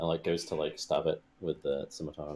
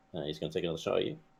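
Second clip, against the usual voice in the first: ordinary delivery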